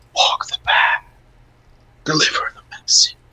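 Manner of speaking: dark, menacing, ominous whisper. After a handshake, the narrator voices a whisper in the player's mind: ominous whisper. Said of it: "an ominous whisper saying".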